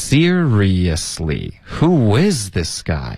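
slow, stress on is, seriously in four syllables.

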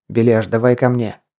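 ordinary delivery, nothing marked

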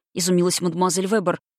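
ordinary delivery

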